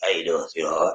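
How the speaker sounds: very deep, soft bass voice. Greeting Terry, imitate how he sounds, in Terry Fleming's deep bass voice. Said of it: "Terry got that deep bass voice".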